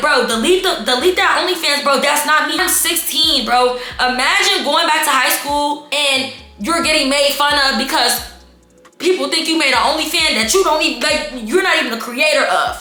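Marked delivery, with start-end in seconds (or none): none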